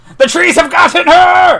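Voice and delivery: screaming character voice. Narrating a tabletop game scene, voicing Warminster: Warminster screaming. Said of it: "Warminster screams".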